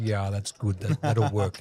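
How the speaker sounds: deep Russian voice, imitated. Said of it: "he's got that kind of deep Russian voice".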